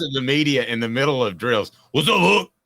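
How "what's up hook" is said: put-on very high, loud, raging coach holler, Louisiana Cajun accent. Imitating a coach yelling to the media during drills: Ed Orgeron impression. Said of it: "Your Orgeron press, uh, impression".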